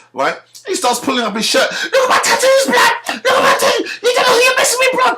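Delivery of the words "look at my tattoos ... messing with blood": put-on very high, rushed screaming. Retelling a young man who screamed at the speaker, imitating someone screaming. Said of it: "he's screaming at me".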